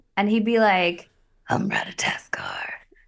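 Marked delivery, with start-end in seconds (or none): 1.5-2.7 put-on very deep Norse-accented voice, lower and quieter. Showing how a Norse squirrel character would sound: Stellan Skarsgård-esque voice but deeper. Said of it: "a Stellan Skarsgård-esque voice".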